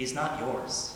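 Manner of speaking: hushed, very soft whisper, close to the ear. Retelling how an ex-girlfriend leaned in and spoke: imitating a whisper. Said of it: "just whispers into my ear".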